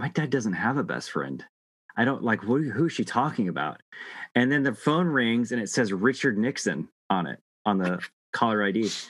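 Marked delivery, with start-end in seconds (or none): none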